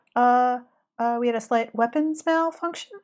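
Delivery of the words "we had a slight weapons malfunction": fake help-desk customer-service telephone voice. Quoting a man who puts on a voice in that quote, customer service voice. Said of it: "he puts on like a customer service voice".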